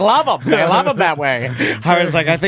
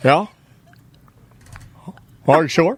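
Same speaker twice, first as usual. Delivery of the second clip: deadpan, flat, unemotional delivery. Imitating Tom hearing on the phone that his wife is pregnant: Tom impression, unemotional. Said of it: "I can do a perfect im-, impression of finding out when Tom found out".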